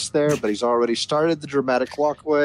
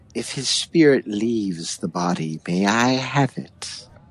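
hushed whisper, lower and slower; 4 semitones lower than usual. Game narrator voicing a voice over a companion who won't wake, whispering. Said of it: "a voice whispers".

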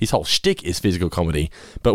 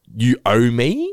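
put-on presumptuous, entitled, demanding attitude; 3 semitones higher than usual. Retelling a homeless guy's attitude: imitating an entitled "you owe me" tone. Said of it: "that tone in his voice".

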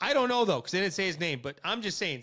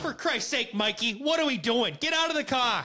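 put-on higher Boston accent; 5 semitones higher than usual. Imagining the same small-town cop stopping Mikey again: Boston accent. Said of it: "I don't know why I went Boston accent".

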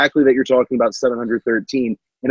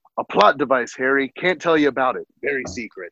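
put-on big half-giant voice, kept soft; 5 dB quieter than usual. Acting out a scene, Hagrid answers Harry's question: Hagrid impression. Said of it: "That's spot on".

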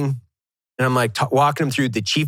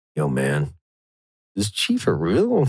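imitated whisper, lower in pitch; 9 semitones lower than usual. Retelling what a guy said to one of the other guys: imitating a whisper. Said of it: "whispers to one of the other guys".

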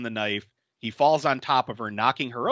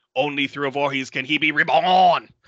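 loud, strained, failing bad Louisiana accent; 5 dB louder than usual. Discussing a scene, speaker imitates a character's line in a bad Louisiana accent. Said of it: "trying real hard to do like a Louisiana accent".

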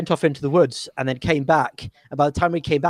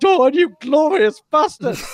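triumphant, glorious, very high, voice-cracking scream; 12 semitones higher, 5 dB louder than usual. Telling a battle story, acting out a fighter's cry to Dawn, retelling a glorious scream. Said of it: "screamed in a glorious voice, in a cracking voice".

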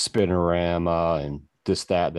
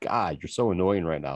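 usual speaking voice

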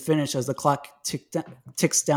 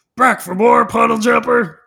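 very loud, rough, gritty guttural mocking voice; 8 semitones higher, 10 dB louder than usual. Reading a story, the menacing wave taunts him in a gritty guttural voice. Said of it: "mocks in a gritty guttural tone".

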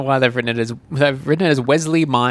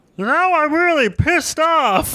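very high, very slow, stretched-out cartoon drawl. Speaker quoting a bit from The Simpsons, doing a Barney impression. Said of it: "That's there's a pretty good voice".

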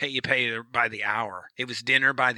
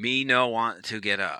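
usual speaking voice

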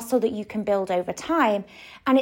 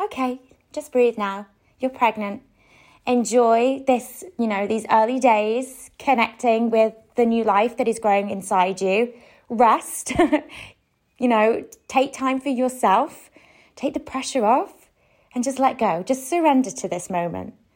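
normal talking voice

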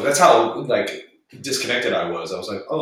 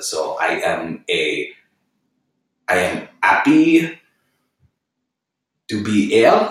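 put-on French accent, very slow and drawn out; 2 semitones lower, 4 dB louder than usual. Explaining how to approach an accent, then demonstrating: French accent. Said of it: "hit us with a French accent".

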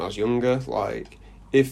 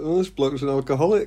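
ordinary delivery

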